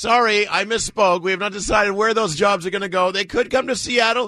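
mock sheepish spokesman voice.

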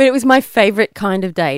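sarcastic delivery.

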